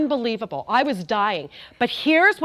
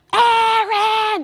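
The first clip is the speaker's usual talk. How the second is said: mock scream, higher and louder; 10 semitones higher, 5 dB louder than usual. Retelling how a husband screamed from the balcony: imitating a scream. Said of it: "he begins to scream from the balcony".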